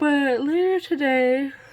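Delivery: high, loud yawn through the words. Speaker talking about sleep and plans for the day, yawning while talking. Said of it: "I'm yawning as I'm talking about sleep".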